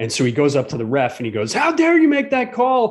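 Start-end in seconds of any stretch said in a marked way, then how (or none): 1.5-2.9 fake outraged yelling, very high. Retelling how a film character confronts the referee during a game, retelling a fake-outraged yell. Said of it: "And then he keeps yelling".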